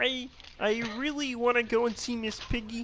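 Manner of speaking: very high, slow, drawn-out frog puppet impression. Asked why he sounds like Kermit, speaker keeps going in a Kermit the Frog impression. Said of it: "you sound like just like him".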